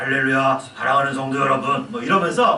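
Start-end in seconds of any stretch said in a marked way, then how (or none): 0.0-1.9 put-on solemn preacher voice, forced and strained. Mocking people who speak with forced voices: put-on forced holy voice. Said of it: "목소리에 힘을 주면서 ... 거룩한 목소리 뭐 홀리 보이스".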